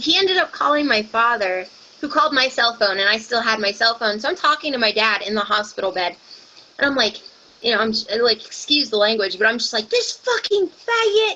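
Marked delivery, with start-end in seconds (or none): 9.9-11.4 put-on furious screaming, pitched way up, very high. Recalling what he yelled on the phone to his dad from a hospital bed; retelling a scream. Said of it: "just screaming".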